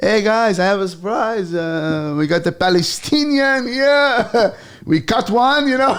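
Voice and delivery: put-on Israeli accent with a French tinge. Retelling how a man introduced him as the comedian to Israeli guys, put-on Israeli accent. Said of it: "the Israeli accent sounds French".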